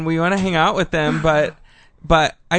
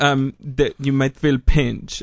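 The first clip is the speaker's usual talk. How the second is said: slow, drawn-out put-on Russian accent; 3 semitones lower than usual. Retelling what he said to the speaker, in a Russian accent. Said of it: "And that was a Russian accent".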